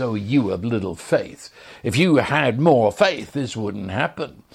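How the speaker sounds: put-on contemptuous, sneering tone. Voicing religion speaking to a troubled believer: imitating a sneer. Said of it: "as it sneers at you".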